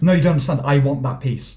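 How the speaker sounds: put-on entitled, insistent tone. Repeating their own past words the way the other speaker remembers them: mock-entitled demand. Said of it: "that sentence said like that".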